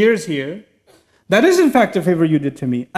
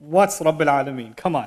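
scoffing, brushing-off, sarcastic tone; 5 semitones lower, 5 dB quieter than usual. Acting out Pharaoh's question: imitating a sarcastic, dismissive question. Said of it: "So he's sarcastic".

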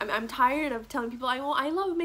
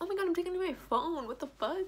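talking through tears, tearful and pitched up; 6 semitones higher, 3 dB quieter than usual. Talking about losing humor to depression, starting to cry. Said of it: "why am I fucking crying?".

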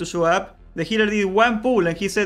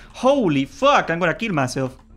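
ordinary talk

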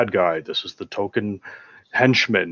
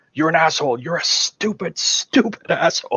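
mock seething, high, angry outburst, stuck for words; 7 semitones higher than usual. Quoting a movie villain insulting a henchman: imitating an angry outburst. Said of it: "he's so angry".

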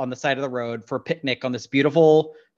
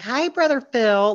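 taunting, mocking little-kid voice, very high; 10 semitones higher than usual. Retelling how one character taunts another, in a mocking childish voice. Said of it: "mocks her in this childish voice".

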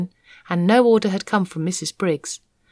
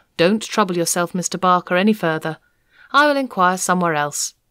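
plain reading voice

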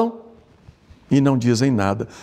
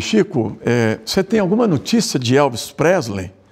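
normal talking voice

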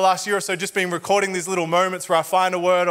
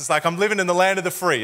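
plain

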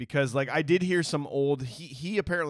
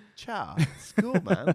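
put-on laid-back, relaxed cadence, higher; 4 semitones higher than usual. Describing how a character makes the group feel welcome: imitating his relaxed cadence. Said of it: "The way he's just like".

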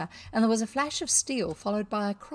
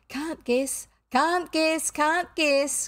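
high, triumphant, gloating crow; 7 semitones higher than usual. Narrator reads Peter's line to the miscreants, crowing. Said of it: "crowed Peter".

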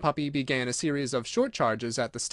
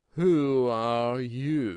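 languid, sleepy, drawn-out drowsy voice; 2 semitones lower than usual. Narrating, the Caterpillar breaks a long silence to address her: languid, sleepy Caterpillar voice. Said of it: "addressed her in a languid, sleepy voice".

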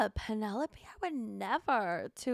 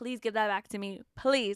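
mock pleading tone, lower; 3 semitones lower than usual. Retelling a plea not to read the paper: imitating her begging. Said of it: "begging him".

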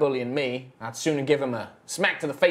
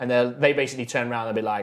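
ordinary talk

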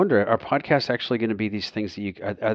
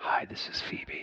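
put-on intimate podcast-host voice, quieter. Complaining about a podcast voice, imitating Phoebe's intimate podcast voice. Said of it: "She feels like she's in your shirt pocket".

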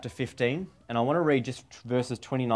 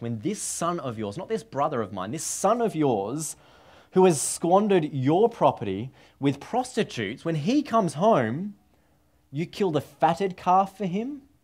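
scornful, contemptuous disdain, pitched up; 5 semitones higher than usual. Quoting the son's complaint to his father: imitating disdain. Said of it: "you can hear the disdain in his voice".

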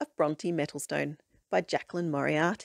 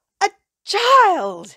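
shrill, very high, very loud exclamation full of vim; 13 dB louder than usual. Narrator reads the librarian at the front desk spotting the narrator, exclaiming. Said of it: "she exclaimed".

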